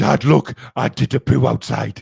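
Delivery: gruff, loud, rough, puffed-up proud dog voice. A dog owner voices what his dog Kobe would say to him, imitating Kobe, mock-proud. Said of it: "all all proud".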